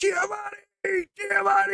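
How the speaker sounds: very high, raspy, rough yelling. Retelling a memory care visit where one man kept yelling, imitating his yell. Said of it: "this one guy's yelling".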